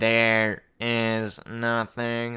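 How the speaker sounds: unsettling, eerie, creepy delivery. Retelling what the clay girl says in the video: imitating an off-putting voice. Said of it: "That's my impression of the voice".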